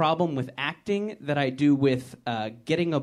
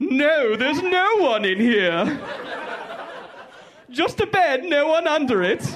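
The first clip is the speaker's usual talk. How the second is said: zany, crazy, very high cartoon voice; 11 semitones higher, 5 dB louder than usual. Imagining hiding under a bed from terrorists, answering them in a crazy Flintstones character voice. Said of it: "you're doing the crazy voice of the guy who works everywhere".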